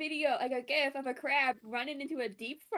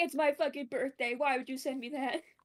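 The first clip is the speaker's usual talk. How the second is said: ordinary talk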